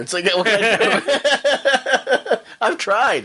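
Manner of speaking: high, slow voice, laughing helplessly.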